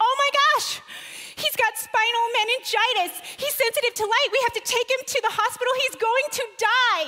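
put-on frantic panic, very high-pitched and loud. Retelling calling to her husband about their sick baby: retelling a panicked call. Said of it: "in a full-on panic, I call to my husband and say".

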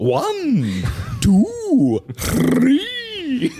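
very high, booming sing-song, "one" stretched, pitched way up. Counting aloud the way the other speaker suggested: Tootsie Pop owl voice. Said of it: "like the, the Tootsie Pop owl".

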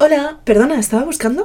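extremely polite service voice. Showing how she asks a shop assistant a question, polite customer-service voice. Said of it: "Pongo mi voz de atención al cliente".

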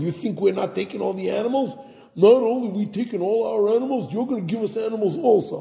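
put-on taunting Brooklyn accent. A speaker critiquing a scene acts out Moshe's retort; Moshe with Brooklyn accent. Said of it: "Very Brooklyn".

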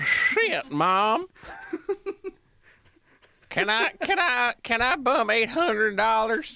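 high-pitched mock southern kid voice.

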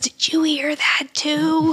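put-on loud childlike stage whisper like a little kid. Retelling a scene where Angela comes up behind someone: Angela's loud little kid whisper. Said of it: "that loud little kid whisper that Angela does".

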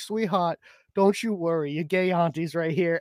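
put-on beautiful, drawled southern US accent. Retelling a video of a man answering someone who gave him grief, in a southern drawl. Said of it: "he's got this beautiful southern drawl".

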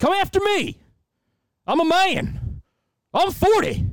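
very high, slow, drawn-out bellow. Retelling a press conference where the coach goes after a writer: Mike Gundy impression. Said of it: "I'll try to do my best impression here".

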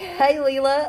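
loud, high-pitched Western accent.

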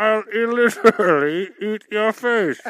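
put-on comic-book supervillain voice. Playing Bane during a riddle game: Bane voice. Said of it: "is that Bane?".

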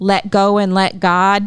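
normal talking voice

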